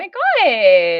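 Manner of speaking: put-on Valley Girl voice, very slow, god stretched. Asking Vesta about keeping it up, then doing a Valley Girl voice. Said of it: "would you really like me to do the Valley Girl voice".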